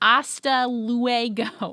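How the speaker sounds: put-on loud, thick English accent on Spanish, luego drawn out. Imitating a teacher saying Spanish words: imitating a thick English accent in Spanish. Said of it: "an incredibly, like, thick English accent".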